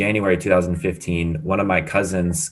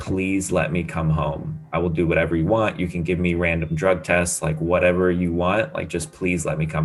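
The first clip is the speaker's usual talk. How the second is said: put-on tearful, crying voice. Retelling a call home to mom, imitating own tearful plea. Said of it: "I called my mom crying on the phone".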